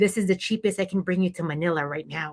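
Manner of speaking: put-on whisper. Retelling what they whispered to their kids in a lineup: retelling a whisper. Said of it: "I whisper to my kids".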